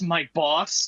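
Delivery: said with disdain, contemptuous tone. Naming a boss while recapping a scene, said with disdain. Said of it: "Why'd you say that with such disdain".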